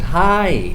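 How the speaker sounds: hi with pitch rising at the end. Greeting someone you are really happy to see: rising intonation on hi. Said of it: "you should use an um, uprising intonation".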